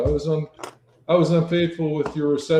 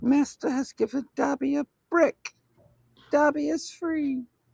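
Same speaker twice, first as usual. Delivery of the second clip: put-on house-elf character voice; 10 semitones higher than usual. Joking about finishing a Lego Dobby, in a Dobby voice. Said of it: "You sound like Dumby".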